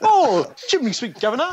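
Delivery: very high, put-on chimney-sweep voice.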